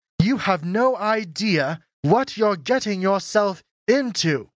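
every word carefully spelled out. She speaks to the narrator during swordplay practice; enunciating, getting louder. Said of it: "enunciating every word while her voice increased in volume".

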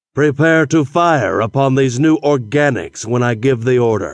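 plain reading voice

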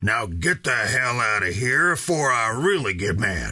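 gruff, threatening growl. Reading a story, the man with the rifle orders Kennedy away; growled. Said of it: "he growled".

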